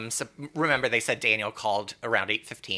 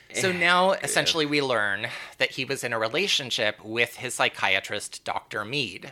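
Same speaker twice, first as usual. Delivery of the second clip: ordinary delivery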